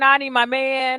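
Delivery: ordinary talk, nothing marked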